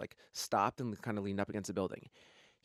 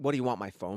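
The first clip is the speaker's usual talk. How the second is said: normal talking voice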